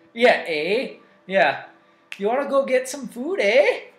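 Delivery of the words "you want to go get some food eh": high-pitched mock Canadian accent. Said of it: "with Canadians, you're making them say a boot".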